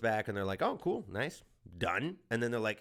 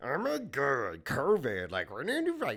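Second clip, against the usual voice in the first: frog-puppet-like put-on voice, pitched higher; 3 semitones higher than usual. Mocking the governor on TV, doing a Gretchen Whitmer impression. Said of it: "it just sounded like Kermit the Crab".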